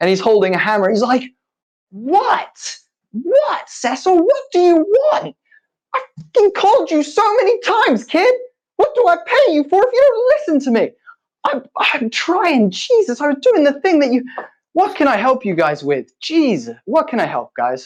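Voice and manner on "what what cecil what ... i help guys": frustrated, irritated voice, pitched higher. Voicing a soot-covered worker called away from his work: frustrated.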